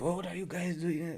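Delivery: mock, high, exasperated, fed-up complaint. Mocking a goalkeeper who throws up his hands: imitating a goalkeeper blaming teammates. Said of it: "he throws his hands like".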